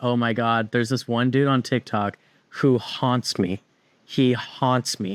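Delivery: ordinary delivery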